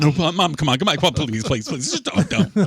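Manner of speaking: put-on childish, pleading, begging voice. Retelling a parent's refusal to keep quiet: imitating his mother. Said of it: "spent begging my mother".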